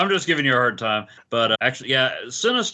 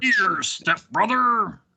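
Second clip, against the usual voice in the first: high-pitched cartoon supervillain voice; 9 semitones higher than usual. Answering a question about Juggernaut, doing a Juggernaut imitation from the X-Men animated series. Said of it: "That was my imitation of the Juggernaut".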